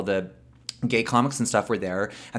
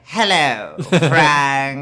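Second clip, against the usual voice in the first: loud, put-on posh British accent, a name drawn out; 4 semitones higher, 5 dB louder than usual. Retelling how she imitated her roommate, proper British accent. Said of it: "whenever people do like proper British accents".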